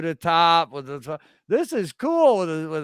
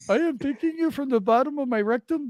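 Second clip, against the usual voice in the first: pitched-up cartoon convenience-store clerk voice; 8 semitones higher than usual. Speaker keeps up a quickie mart bit, in a Simpsons quickie-mart clerk voice. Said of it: "did you get that from the Sim- Simpsons?".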